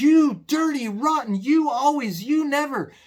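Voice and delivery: furious, loud, high-pitched ranting. Advising wives on listening, the speaker acts out a husband: mock-angry husband. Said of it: "you just say it just like this".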